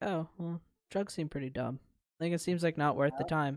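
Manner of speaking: normal talking voice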